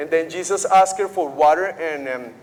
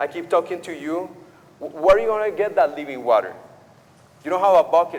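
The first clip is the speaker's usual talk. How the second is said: tart, hard-edged, hard delivery. Paraphrasing a woman's words to a man at a well, retelling in a tart tone. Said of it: "a hard, a tart tone of voice".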